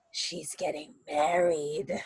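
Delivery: low, hushed half-whisper. An old flower vendor who has been watching the two leans in and tells them, in a low half-whisper. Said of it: "she whispers at you, ... in this like low voice".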